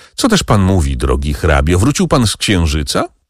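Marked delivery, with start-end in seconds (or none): none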